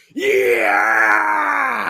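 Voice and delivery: loud celebratory scream. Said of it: "I literally screamed out like".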